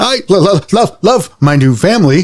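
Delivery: very high, loud, canned mechanical robot toy voice. A toy speaks to its new family in a canned robotic voice. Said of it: "a canned robotic voice speaks".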